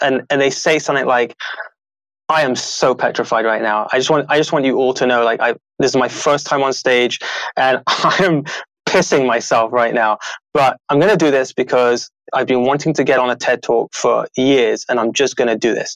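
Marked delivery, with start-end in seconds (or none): none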